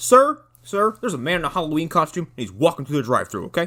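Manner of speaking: griping, complaining voice. Imagining a customer walking in to report someone in the drive-thru: complaining customer. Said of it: "I'm imagining someone walking in going like".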